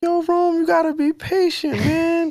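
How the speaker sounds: very high borrowed male voice. Asked to say it in his voice on the spot: imitating another man's voice. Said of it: "we all say it in his voice".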